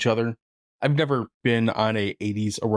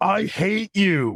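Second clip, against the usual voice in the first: mock super loud, high-pitched, shrill shout; 10 semitones higher than usual. Retelling how one guy in a movie scene yells: imitating a very loud yell. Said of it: "very audibly and very loudly goes".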